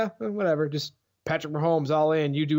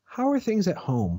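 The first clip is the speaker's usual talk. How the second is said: gentle, worried, caring teacher-like tone; 3 semitones higher than usual. Acting out a teacher asking a parent about home, mock-concerned teacher voice. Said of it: "in a very concerned voice says".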